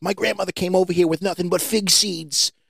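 exaggerated put-on Italian accent, high-school kid voice. Recalling a kid from high school, doing an impression of an italian kid. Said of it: "you know I sound exactly like him".

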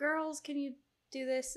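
fake loud high calling. Explaining a pet bird's imitation, quoting how mom calls the girls: imitating mom yelling from upstairs. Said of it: "but yelling it like my mom would".

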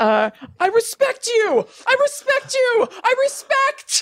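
acted, very high, swooping, wailing freak-out sob-scream. Retelling what a man screamed during a show, imitating crying and screaming. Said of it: "freaking out crying and screaming like".

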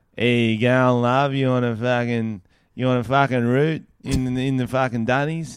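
put-on, fake Australian accent. Taking the australian turn in a list of sexy accents, mock australian accent. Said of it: "That was pretty Australian".

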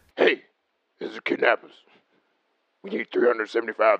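put-on raspy, aggressive, menacing voice. Acting out a ransom phone call, the speaker puts on a raspy aggressive kidnapper voice. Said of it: "you give them that aggressive voice".

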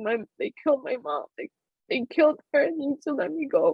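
frantic, desperate screaming outcry. Retelling begging airport security to be let through: retelling own screaming. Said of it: "I kept screaming".

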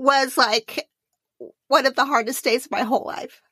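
on the verge of crying. Speaker tells the couple about the night before their wedding, on the verge of crying. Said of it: "I am going to cry".

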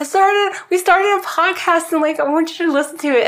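high, rushed, eager, excited voice.

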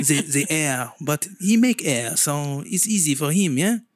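fake French accent put on for comic effect. Joking about God with the other speaker, in a fake French accent. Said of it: "you have to fake your French accent".

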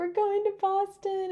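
acted bawling, pitched way up, crying through words. Retelling crossing the marathon finish line to Dad: imitating own sobbing speech. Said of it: "I'm bawling my eyes out".

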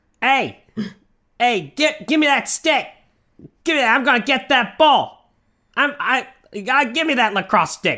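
put-on lacrosse-player accent. Showing off a new impression, in a put-on lacrosse accent. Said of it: "This is my lacrosse accent".

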